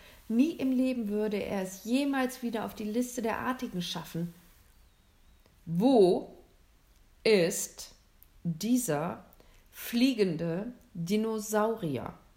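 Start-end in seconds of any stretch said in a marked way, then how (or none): 5.7-12.1 fearsome, menacing tone with words very slow. Narrator reads the hunter demanding an answer from William: terrible, frightening tone. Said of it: "in einem ganz fürchterlichen Ton".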